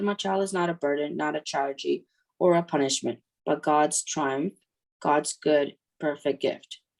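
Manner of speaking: ordinary delivery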